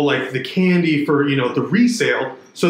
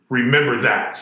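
mock stern delivery; 2 semitones lower than usual. Retelling what a daughter said on coming back: imitating a stern warning. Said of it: "this real stern face".

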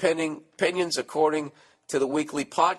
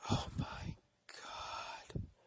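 very soft, breathy, barely voiced whisper. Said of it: "I'll just whisper".

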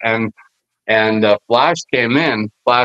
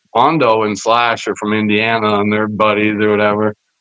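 plain

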